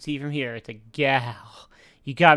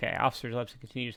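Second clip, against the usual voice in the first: ordinary delivery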